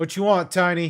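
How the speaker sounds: rough, gruff voice. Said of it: "a rough gruff voice".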